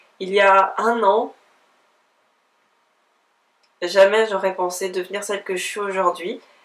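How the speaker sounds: tearful, tears welling up. Woman reflecting on how much she has changed in a year, tearful, tears welling up. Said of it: "j'ai les larmes aux yeux qui montent".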